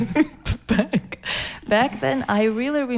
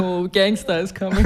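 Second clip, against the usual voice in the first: put-on mocking, teasing voice; 2 semitones lower than usual. Recalling years of family teasing, imitating relatives' mockery. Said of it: "Everyone was making fun of me".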